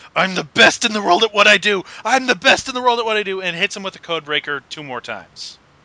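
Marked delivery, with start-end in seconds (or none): 0.2-3.4 put-on, in-your-face, repeated high-pitched wrestling scream. Retelling how Jericho got in an opponent's face: imitating Jericho screaming. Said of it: "just starts screaming".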